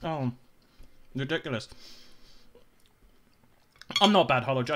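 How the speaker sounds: talking with mouth full, chewing while speaking. Chatting about a uni memory while eating, talking with mouth full. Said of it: "I'm so sorry. I'm ending up eating".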